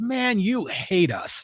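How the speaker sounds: slow, high-pitched delivery. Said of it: "And he goes".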